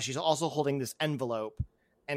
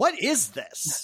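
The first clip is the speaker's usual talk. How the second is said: voices shouting loudly; 3 semitones higher than usual. Voicing a row of freed hostages loudly demanding justice: loud voices of hostages. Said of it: "you hear them kind of loudly being like".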